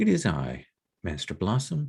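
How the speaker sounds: even, composed, steady, clear, calm voice. Voicing the magistrate's son greeting Master Blossom: steady, clear, calm voice. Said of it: "that steady, clear, calm voice".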